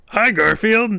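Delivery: scratchy, very high-pitched voice. Trying out a possible voice for the character Frank, scratchy Frank voice. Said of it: "you're doing it a little scratchier".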